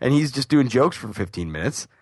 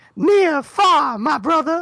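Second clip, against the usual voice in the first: put-on jive talk, higher and louder; 5 dB louder than usual. Imitating a Muppet voiced by Gordon: imitating a Muppet's jive voice. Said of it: "Gordon doing the voice, but to come out and be like".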